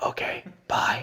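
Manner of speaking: breathy, hushed whisper. Retelling answering a phone call while on a hunting stalk: imitating own whisper. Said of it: "I'm, like, whispering".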